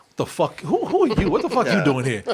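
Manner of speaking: irritated, baffled, annoyed outburst with swooping pitch. Retelling a movie scene where Bruce Wayne meets someone: imitating annoyed Bruce Wayne. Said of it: "even Bruce Wayne is like".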